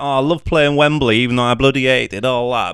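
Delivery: generic Manchester accent. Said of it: "generic Manchester, like, you know, like [name]".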